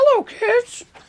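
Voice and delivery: high cartoon mouse impression. Asked to do an impression, the speaker tries a Mickey Mouse impression. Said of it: "Can you do Mickey Mouse impression?".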